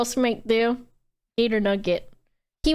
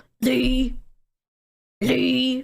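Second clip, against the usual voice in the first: sneering, mocking put-on character voice. Recalling being called a hated nickname: Rat Boy voice. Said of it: "He would say it like that and talk to me in his fucking Rat Boy voice".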